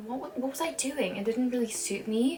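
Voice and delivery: plain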